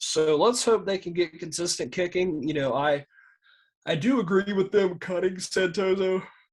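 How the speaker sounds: speaking through yawns. Speaker in conversation, yawning while talking. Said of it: "Sorry for the yawning".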